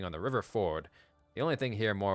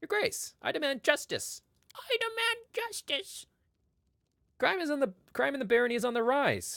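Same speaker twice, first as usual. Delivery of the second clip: voice pushed way up high. Narrator voices a stranger addressing the listener, in his unusually high-pitched voice. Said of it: "speaks to you in an unusually high-pitched voice".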